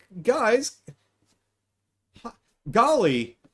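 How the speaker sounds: very high, loud, dorky voice with swooping pitch. Comparing a show's Superman and Clark Kent voices, the speaker does a high dorky Superman voice. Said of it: "higher, dorkier voice".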